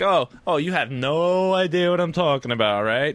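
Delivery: put-on sarcastic tone. Speaker retells a guy getting sarcastic with him: mock-sarcastic retelling. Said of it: "he starts getting all sarcastic on me".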